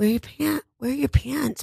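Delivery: sweet, very high-pitched, slightly creaky voice. Speaker retelling what their mom Joanne said, imitating Joanne asking sweetly. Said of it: "she says it very sweetly".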